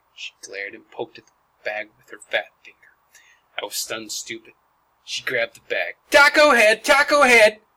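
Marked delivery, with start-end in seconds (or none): 6.2-7.5 very high, very loud, shrill yell. Narrator reads a girl's line as she grabs the bag; yelled. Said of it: "She yelled".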